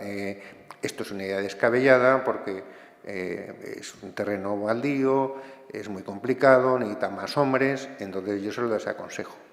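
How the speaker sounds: usual speaking voice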